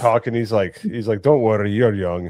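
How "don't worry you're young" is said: put-on Scottish accent, louder. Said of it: "That Scottish accent".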